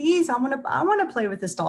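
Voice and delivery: put-on high, pleading, begging child's voice. Retelling how one girl begged another to share a doll, imitating someone begging. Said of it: "she's begging to play with the doll".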